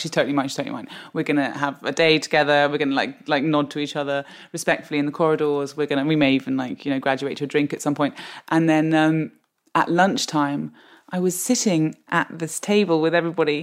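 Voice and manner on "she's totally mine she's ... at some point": plain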